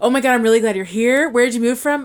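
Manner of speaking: mock overexcited, aggressive, gushing enthusiasm. Teasing the other speaker by retelling their greeting to a new villager: mock overexcited gushing. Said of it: "you were just so aggressively excited".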